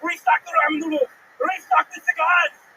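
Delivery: high-pitched, barking delivery. Retelling a dream where the manager yells orders, Arnold Schwarzenegger yelling. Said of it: "he's just yelling at me".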